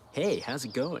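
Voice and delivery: clumsy fake American accent. Speaker trying out accents for a setup video, bad american accent attempt. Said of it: "with an American accent".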